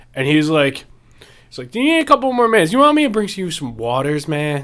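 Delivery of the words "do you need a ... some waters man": put-on stoned-sounding voice, much higher pitch. Telling a story about the only waiter at a place, imitating a stoned waiter. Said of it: "he was either permanently high".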